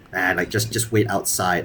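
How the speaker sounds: normal talking voice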